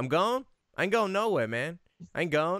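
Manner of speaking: irritated, annoyed tone. Retelling how a man misunderstood a greeting: imitating an annoyed man. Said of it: "the guy got pissed off".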